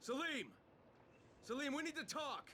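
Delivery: insistent, pressing, urgent calling out. Calling out to Salim, demanding to talk: yelling. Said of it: "Stop yelling".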